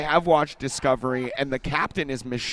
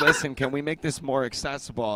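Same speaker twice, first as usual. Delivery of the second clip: usual speaking voice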